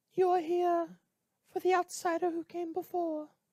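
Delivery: voice pushed very high and very loud. Voicing Lady Richfield in a roleplay scene, speak in the Lady Richfield voice. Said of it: "this voice is not easy to hold".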